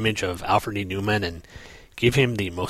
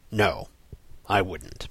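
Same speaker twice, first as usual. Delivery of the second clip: acted-out grave, dead-serious, very serious tone; 3 dB quieter than usual. Speaker recapping a scene, retelling Superman's very serious reply. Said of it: "Superman replies in a very serious tone".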